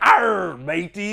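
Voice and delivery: classic cliché stock movie-pirate voice. Asking why everyone does the same voice for pirates, doing a pirate voice. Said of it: "do that voice whenever we hear pirate".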